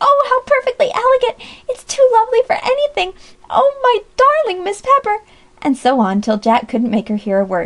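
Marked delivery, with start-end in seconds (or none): 0.0-5.2 very high shriek of delight. Amy answers Brother Jack's marriage proposal in the reception room; screaming. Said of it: "she screamed".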